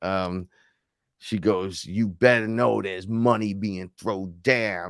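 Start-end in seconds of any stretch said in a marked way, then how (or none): 1.8-4.9 put-on gangster-sounding woman's voice, tough talk. Retelling what a woman said to the speaker: imitating a gangster-sounding woman. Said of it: "she was really gangster".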